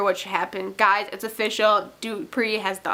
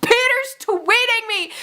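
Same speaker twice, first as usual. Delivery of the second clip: put-on scream, higher and louder; 13 semitones higher, 4 dB louder than usual. Retelling screaming in a candy shop over a tweet: imitating own screaming.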